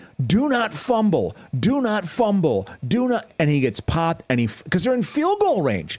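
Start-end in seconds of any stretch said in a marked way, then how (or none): 0.3-3.3 slow, deliberate, drawn-out yelling. Retelling watching a Vikings game, retelling yelling at the TV. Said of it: "And I'm yelling at the TV".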